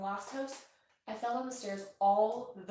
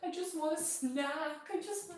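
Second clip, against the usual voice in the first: tearful whimper, higher; 7 semitones higher than usual. Retelling crying after a fall on the stairs: imitating own past crying. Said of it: "and I was crying".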